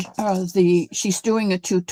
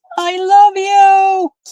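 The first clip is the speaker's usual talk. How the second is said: very loud, very high shout; 12 semitones higher, 9 dB louder than usual. Retelling what someone yelled out of a rolled-down car window: imitating someone yelling. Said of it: "he yelled".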